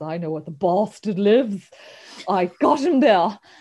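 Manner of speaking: lousy, terrible put-on British accent. Recapping Dracula, acting out Jonathan Harker in his terrible British accent. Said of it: "in his terrible British accent".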